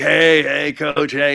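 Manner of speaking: slow, gravelly, rasping voice. Retelling a meeting with a coach at a game: imitating Don Johnson's gravelly voice. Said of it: "real gravelly voice".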